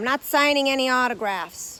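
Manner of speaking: cross, growling, booming voice at very loud volume. Narrator reading a children's story, a man on a couch answers a visitor, growled. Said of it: "he growled".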